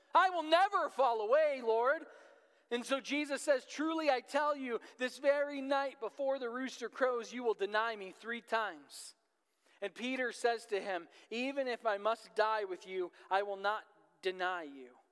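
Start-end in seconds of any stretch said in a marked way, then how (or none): 0.1-2.0 mock boastful, proud, self-assured, raised voice. Reading the Gospel aloud and acting out Peter's reply to Jesus: Peter's put-on pride. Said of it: "I can almost hear the pridefulness in Peter's voice".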